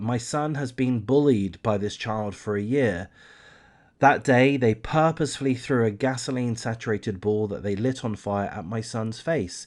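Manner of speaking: ordinary talk, nothing marked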